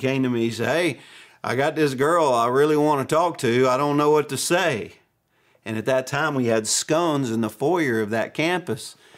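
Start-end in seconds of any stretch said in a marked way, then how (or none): 0.7-4.9 put-on Arkansas accent. Retelling a church member asking for advice: imitating deep Arkansas accent. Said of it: "this is the way the guy spoke".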